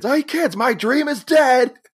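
mock yelling, very high and shrill. Retelling a scene where a character yells at kids: imitating someone yelling. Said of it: "he starts yelling at the kids".

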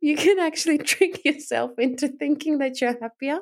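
high voice, words broken up by laughter. Recording a podcast alone, the speaker can't stop laughing: laughing while talking. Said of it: "Now I can't stop".

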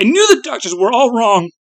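very high, exclaiming cry. He speaks to the figure, crying out. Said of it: "he cried".

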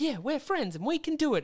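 sweet, cute, very high-pitched cartoon hero voice. Retelling how he sounds doing his Yugi voice, cute Yugi voice. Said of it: "his Yugi voice is so cute".

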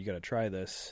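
normal talking voice

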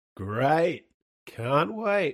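sarcastic, mock-enthusiastic, fake excitement. Replying after being told to listen to the record soon, sarcastic. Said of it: "I don't know why I'm being sarcastic there".

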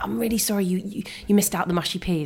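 ordinary talk

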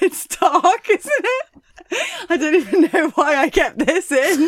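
high, loud laughing fit.

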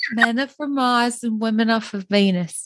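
put-on Southern-accented delivery. Quoting a character from Clueless who reads a book: imitating a Southern accent. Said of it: "you're giving, like, a Southern accent".

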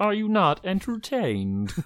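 robotic computer voice. Suggesting a cheap voice cast to save budget, doing a computerized voice. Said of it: "we could just use computerized voice".

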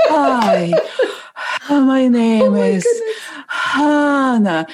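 put-on sexy, breathy voice. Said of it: "with this kind of sexy breath".

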